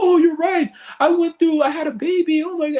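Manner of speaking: mock shocked, voice shooting very high. Retelling his reaction to an aura reading, imitating shocked surprise. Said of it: "And he's all shocked".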